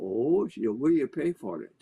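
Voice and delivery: put-on Scottish accent in an old woman's voice. Retelling what an old woman on a porch asked: Scottish accent. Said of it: "said in that wonderful Scottish accent".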